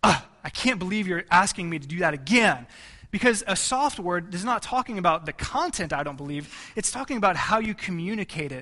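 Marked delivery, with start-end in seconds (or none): 0.0-2.7 harsh, exasperated, annoyed voice. Showing a harsh reply to a spouse in conflict: harsh irritated tone. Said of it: "you can have a harsh word".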